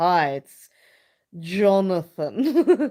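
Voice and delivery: sultry, slow late-night radio-host voice. Imitating a man who was on every night, in Jonathan's sultry, slow, deep voice. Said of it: "the most sultry, slow, deep voice".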